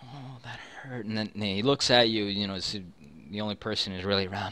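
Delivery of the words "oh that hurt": pained, much quieter and slower. Narrating a character who just doused his burning arm, pained, after a burn. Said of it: "checking it and checking for burns".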